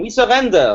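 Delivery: over-the-top, high, exaggerated screamed cry.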